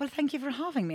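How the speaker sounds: put-on British accent, very high. Retelling talking back to a play date host: imitating a British accent. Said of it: "talk back to the person in the same accent".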